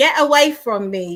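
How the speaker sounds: put-on Cockney accent. Showing how they once spoke when going for film, in a Cockney accent. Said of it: "like that Cockney accent".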